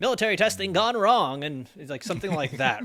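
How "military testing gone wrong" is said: put-on raised, high-pitched old-fashioned radio announcer voice. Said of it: "It's a good old-timey voice you have there".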